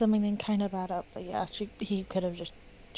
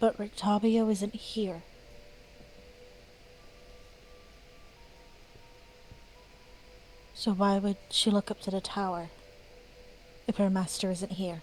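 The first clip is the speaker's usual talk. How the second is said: very quiet whisper, quieter; 4 dB quieter than usual. Voicing a character speaking so only two companions can hear: whispering very quietly. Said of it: "Amira whispers very quietly".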